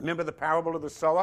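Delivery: fast, rushed, preaching delivery. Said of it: "am I speaking too fast?".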